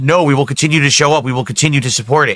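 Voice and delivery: ordinary talk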